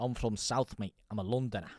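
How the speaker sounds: fake, put-on northern English accent. Saying where the speaker is from, in a put-on northern accent. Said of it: "I put a bloody northern accent on".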